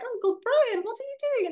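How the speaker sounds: put-on terrible British accent, very high, kid-like. Retelling a film scene, voicing the niece and nephew in a bad British accent. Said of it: "that was a terrible version of one".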